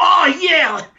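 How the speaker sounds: shouting male voices. Voicing gamblers behind a door: guys shouting at each other. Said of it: "guys, like, shouting at each other".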